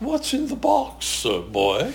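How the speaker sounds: put-on high falsetto. Retelling your interview, quote the woman who interviewed you in a high falsetto voice. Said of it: "she spoke in this high falsetto voice".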